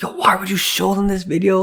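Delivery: heated outburst pitched very high. Retelling a confrontation with friends, imitating own heated outburst. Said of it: "getting so heated in the moment".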